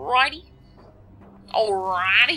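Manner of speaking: put-on Southern-accented voice. Gamer on camera, doing weird voices while playing; southern accent. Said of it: "Got a southern accent now".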